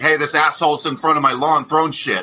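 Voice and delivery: loud, high call-out for all to hear. Recounting calling the cops on a man at his lawn, retelling a loud call-out. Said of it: "And then loudly".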